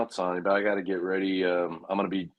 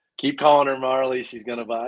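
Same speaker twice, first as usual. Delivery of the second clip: reading aloud through laughter; 5 semitones higher, 5 dB louder than usual. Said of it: "Sorry, I'm laughing at Angry".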